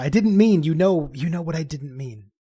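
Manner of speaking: theatrical whisper. Speaking in character beside a sleeping companion: stage whisper. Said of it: "I say in a stage whisper".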